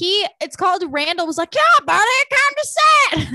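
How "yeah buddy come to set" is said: squeaky, very high, drawn-out schmoozy put-on voice. Mocking someone inviting a friend to set: Randall voice. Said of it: "That's my Randall voice".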